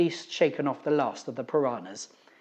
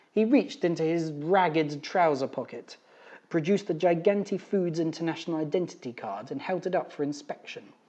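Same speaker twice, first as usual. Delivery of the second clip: plain reading voice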